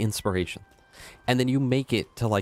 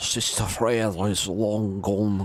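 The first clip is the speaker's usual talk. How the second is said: put-on Scottish accent, spoken slowly. Quoting a favourite line from the game: Scottish accent from Ashes of Ariandel. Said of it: "Out of all the Scottish accents, the one from Ashes of Arendelle D L C".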